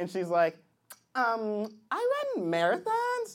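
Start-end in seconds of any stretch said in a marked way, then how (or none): 1.2-3.3 put-on swooping sing-song voice with rising pitch.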